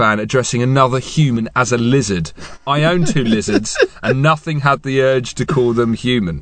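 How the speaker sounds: ordinary delivery, nothing marked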